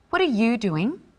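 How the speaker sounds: genuinely curious and interested. Demonstrating inflection in an example dialogue: curious question. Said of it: "asking a question, being curious and interested".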